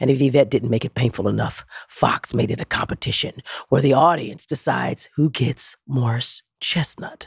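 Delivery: speaking in a whisper. Opening a podcast episode to a co-host: whispering. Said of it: "why are you whispering?".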